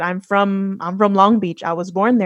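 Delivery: ordinary talk, nothing marked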